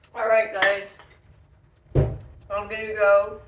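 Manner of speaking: loud, chewing, talking around a full mouth. Signing off to viewers between bites of food, talking with mouth full. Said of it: "Excuse me for having my mouth full".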